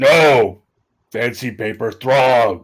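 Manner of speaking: fantasy orc character voice. Narrating a fight among orcs, voicing another orc in a different orc voice. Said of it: "another kind of eruption with a different orc voice".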